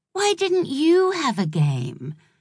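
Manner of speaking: gentle, caressing, high and swooping. Narrator reads a daughter speaking to her mother by the door, soft, almost caressing. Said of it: "Her voice was soft, almost caressing".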